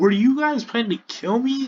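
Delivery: mock very high, freaked-out, frantic shout. Retelling a character's line from a story, imitating someone yelling. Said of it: "In a yelling voice".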